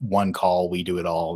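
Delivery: ordinary talk, nothing marked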